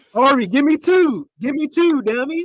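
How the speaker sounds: mock, put-on Baltimore accent. Teasing Ari after a question about the Baltimore accent: mock Baltimore accent. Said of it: "that accent that they got in Baltimore".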